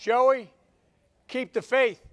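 very loud, high-pitched yell. Retelling what grandfather Finnegan called out leaving his house: imitating grandfather Finnegan yelling. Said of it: "he'd yell".

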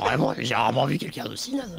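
rough put-on smoker's voice.

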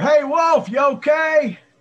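very high, loud yell.

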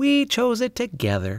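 very high voice, glowing with pride. Answering a neighbor who asked her pet's name, speaking proudly. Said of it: "said Charlotte proudly".

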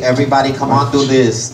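normal talking voice

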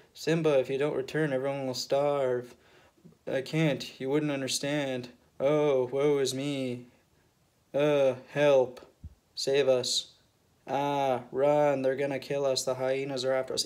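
deadpan, flat, lifeless, emotionless monotone. Mocking the remake's voice actors: imitating flat emotionless voice acting. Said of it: "you get no, like, actual emotion from, like, the voice actors".

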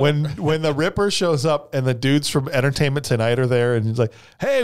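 plain

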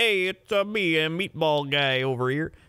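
put-on Chicago accent. Arguing that some people really talk that way, the speaker does a Chicago accent impression. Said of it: "there's people that actually sound like".

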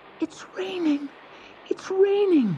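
gasping in delight. Narrator voicing the roses as the raincloud rains on them, gasping in delight. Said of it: "They gasped in delight".

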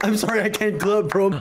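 ordinary delivery

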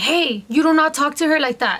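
firm, stern voice.

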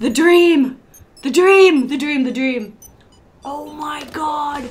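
way too hyped. A streamer reacts during a game with friends, overexcited. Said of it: "you need to chill".

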